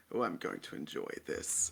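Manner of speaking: breathy, hushed put-on voice, whispered. Voicing a cloaked opponent who raises his rapier: voicing a cloaked rapier opponent. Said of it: "he sort of just raises his rapier up in, into his face and goes".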